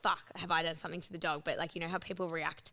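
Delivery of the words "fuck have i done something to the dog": ordinary talk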